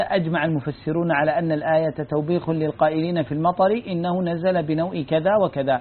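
usual speaking voice

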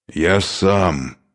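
hoarse, rasping, croaking voice. A wounded man held down by Dukharev, hoarse and rasping. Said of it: "прохрипел раненый".

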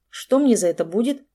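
ordinary delivery

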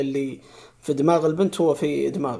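colloquial Egyptian Arabic delivery. Quoting someone describing their own identity, in an egyptian arabic accent. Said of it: "يقولها كذا بالمصري".

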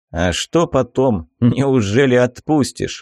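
said with a smirk. Reading a story, a captive asks his captor a question: smirking. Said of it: "усмехнулся пленник".

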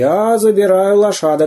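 firm, no-arguing tone. A narrator reads the zoo director's declaration, categorical. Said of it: "категорически заявил директор".

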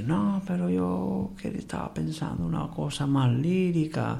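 put-on laid-on Cuban-accented Spanish. Retelling Flores's reply in their conversation: imitating Flores's Cuban accent. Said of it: "con un acento cubano".

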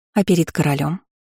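ordinary delivery

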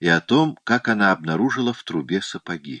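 ordinary delivery

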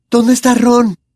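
very high, terrified voice. Narrator reading a character's question on entering a tunnel: terrified voice. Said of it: "le preguntó con voz aterrorizada".

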